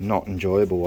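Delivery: ordinary talk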